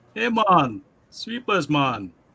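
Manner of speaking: put-on Haitian-accented speech. Recalling how a man from Haiti talked, imitating a Haitian accent. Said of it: "he had that Haitian accent".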